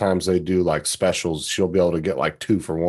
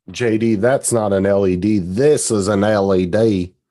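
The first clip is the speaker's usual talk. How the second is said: clumsy, bad, loud put-on Australian accent; 3 semitones higher, 5 dB louder than usual. Speaker addresses J D, doing a bad Paul Hogan impression. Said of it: "I can't do a fucking Australian accent".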